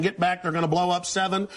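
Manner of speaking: ordinary talk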